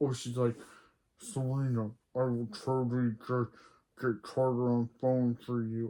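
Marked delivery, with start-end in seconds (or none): 1.2-5.9 terrible put-on villain voice. Recapping a show, quoting Cece as Darth talking to Serena: terrible Darth Vader impression. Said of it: "terrible Darth Vader impression".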